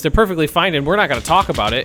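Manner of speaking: loud, fast, condescending voice.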